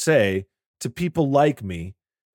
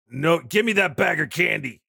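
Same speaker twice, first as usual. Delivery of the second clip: play-acted, commanding police officer voice; 6 semitones higher than usual. Pretending to be a cop carding trick-or-treaters: mock police officer. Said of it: "G P D over here".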